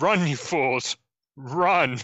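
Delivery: furious, urgent, angry voice. A player voices their character turning on the bystanders: angry yell at bystanders. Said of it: "And I yell at all the bystanders".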